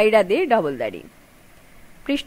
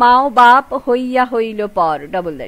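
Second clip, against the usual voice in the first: usual speaking voice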